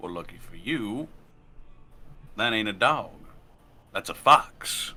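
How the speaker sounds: sardonic, wry and dry tone. A wry mercenary answering a bar rule against animals, dryly correcting the matter. wry, sardonic. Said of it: "Bright red hair, somewhat long on the top, very tight on the sides. Wears a bandana-like shawl over the front of his face. Has a red duster cloak with some gold accents. But stranger than that still".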